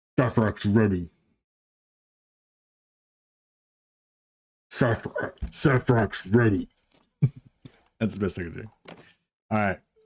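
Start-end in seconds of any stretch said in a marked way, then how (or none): 0.2-6.7 slow, drawn-out, modulated voice. Voicing the new Justicar character, in a Grey Knight modulated voice. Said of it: "Grey Knight modulated voice".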